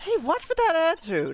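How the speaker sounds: shrill, high-pitched, loud scolding yell. Voicing a game character who snaps at a kid: yelling at a kid. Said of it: "you really shouldn't yell like that".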